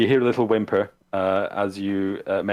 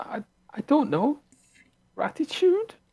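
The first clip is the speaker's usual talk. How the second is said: put-on very high, swooping, whiny teenager voice. Voicing the girl in a scene, answering the other player, whiny teenager voice. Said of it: "That was a whiny teenager voice that I just did".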